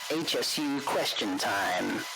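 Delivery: smooth, deep radio DJ announcer style. Playing a sound effect that announces the question segment: radio DJ voice. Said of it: "It sounded like some next radio D J".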